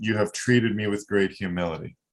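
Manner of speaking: usual speaking voice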